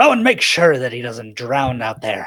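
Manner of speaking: called-out delivery. Voicing the captain calling down to a player in the water: calling out. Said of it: "he calls out to you".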